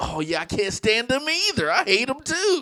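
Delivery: very high, delighted, eager and gleeful. Retelling what a partner said with a grin: imitating a grinning woman. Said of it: "she just gets this grin like".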